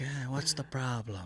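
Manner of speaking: hushed, calm, mafia-don style voice. Imitating a calming grandmother: imitating grandmother like the Godfather. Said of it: "she was almost like the Godfather".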